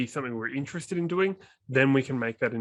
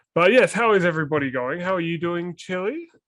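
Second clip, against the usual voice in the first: plain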